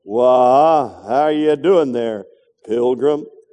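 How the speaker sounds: lousy low voice, wah drawn out. A preacher in a sermon tries a quick impression, lousy John Wayne impression. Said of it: "Let me see if I can get John Wayne's voice here".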